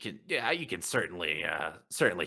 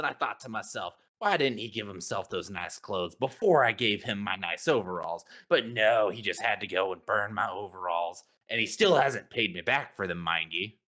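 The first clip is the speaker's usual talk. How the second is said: plain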